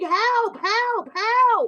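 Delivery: mock screaming cries. Describing children watching a gunman, imitating their mother screaming. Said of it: "mommy screaming".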